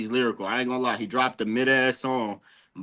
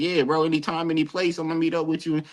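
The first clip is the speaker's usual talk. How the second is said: casual, street gangster-style voice; 5 semitones higher than usual. Contrasting how a gangster talks: imitating a gangster. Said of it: "A gangster gonna say".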